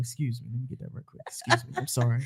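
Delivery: whispered, hushed, breathy, put-on stud voice. Acting out approaching a woman at the milk section: stud voice. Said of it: "I put my stud voice on".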